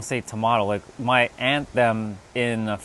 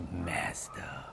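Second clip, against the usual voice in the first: Mazda strongly emphasized, hit hard; 5 semitones lower, 16 dB quieter than usual. Insisting on how the word is said: stress on MAZDA. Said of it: "I'm gonna even put some emphasis on that".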